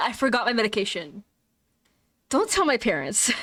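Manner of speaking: confiding, secretive, owning-up tone. Telling listeners about a trip to Japan, saying it quietly. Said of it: "I'm gonna say this quietly".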